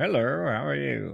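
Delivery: rough, creaky, raspy put-on voice, a bit high. Returning from a break, doing a Lew Wallace impersonation. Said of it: "That was my Lew Wallace impersonation".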